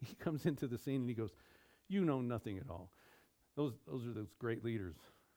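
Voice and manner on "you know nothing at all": put-on condescending voice, lower. Acting out Caiaphas speaking to the other leaders, mock-condescending Caiaphas. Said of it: "Caiaphas speaks condescendingly to the other leaders".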